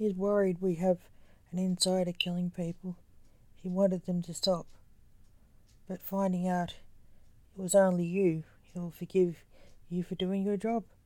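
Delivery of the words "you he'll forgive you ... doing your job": plain reading voice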